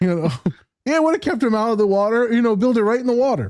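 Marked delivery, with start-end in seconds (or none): 1.0-3.5 high-pitched mock rant in a bigot character voice. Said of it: "You're in character".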